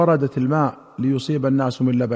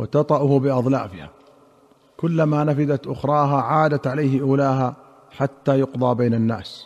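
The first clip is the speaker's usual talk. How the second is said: usual speaking voice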